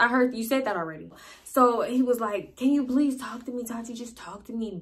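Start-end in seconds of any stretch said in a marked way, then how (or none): 2.6-4.8 soft, earnest, begging plea, acted out. Retelling how a man pleaded with her to talk to him, imitating him begging. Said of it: "begging me to talk to him".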